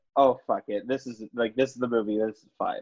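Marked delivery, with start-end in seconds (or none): none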